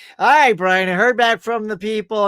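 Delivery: put-on very depressed tone. Speaker retells his manager giving him audition news, imitating her super depressed voice. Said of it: "she sounded super depressed".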